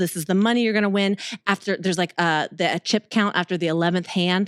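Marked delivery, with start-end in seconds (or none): 0.0-1.2 put-on serious announcer voice, lower. Retelling reading the rules in a suit: imitating a serious announcer tone. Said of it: "You sound serious".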